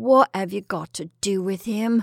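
empty, barren voice. Narrator reading a man's question to a woman: barren voice. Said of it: "he asked in a barren voice".

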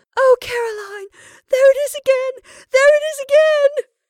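wild wailing cry, very high and loud. Rebecca cries out to caroline after glancing at the wall, in a wild wail. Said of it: "burst out in a wild wail".

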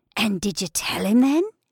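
husky, hoarse whisper. One woman asks another a question, laden with mystery, in a husky whisper. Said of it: "she concluded in a husky whisper".

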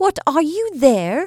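surprised, caught off guard. Narrator reads Sonya replying when Natasha asks about a tune, startled.

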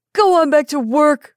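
high, loud, maddened scream. Maddened, a man screams at a man sitting by the fire: screaming. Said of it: "he screamed".

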